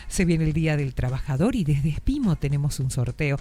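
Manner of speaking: low radio-announcer tone, promo-style delivery. Recreating a past radio announcement about a giveaway, in a low radio-announcer tone. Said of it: "hablaba así en ese tono".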